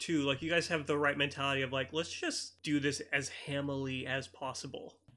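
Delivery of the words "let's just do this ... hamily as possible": normal talking voice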